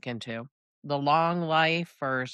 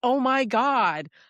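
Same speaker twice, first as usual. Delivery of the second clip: mock screamed outburst, loud and high-pitched; 10 semitones higher, 5 dB louder than usual. Retelling driving home while listening to a book: imitating own screaming. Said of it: "I'm just at the point where I'm screaming".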